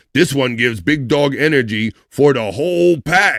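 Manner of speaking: talking cartoon mascot dog voice. Presenter quoting the Mug Root Beer mascot dog, in the dog voice. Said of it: "in the dog voice".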